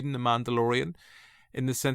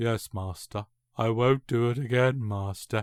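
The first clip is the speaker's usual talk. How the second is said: scornful, sneering put-on voice. Mocking an actor's Attack of the Clones performance, Hayden Christensen impression. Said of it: "let me do an impression of Hayden Christensen".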